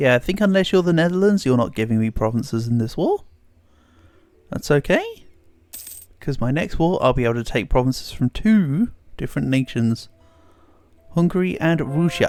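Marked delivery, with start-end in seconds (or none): 11.1-12.3 purposely silly, deliberately goofy delivery. Naming the nations to take provinces from next war: purposely silly delivery. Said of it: "I am purposely being silly when I say it like that".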